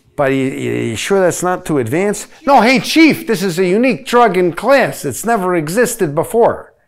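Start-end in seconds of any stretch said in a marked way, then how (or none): 2.5-6.6 comic, pitched-up, put-on Brooklyn accent. In a skit, a character defends a new drug to the chief: brooklyn accent. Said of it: "Why do you sound like you're from Brooklyn?".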